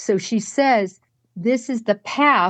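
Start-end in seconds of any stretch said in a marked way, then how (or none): 1.4-2.5 mock, declaring, announcer-style delivery. Retelling a recorded line: imitating a loud line. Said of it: "loudly that we can all hear".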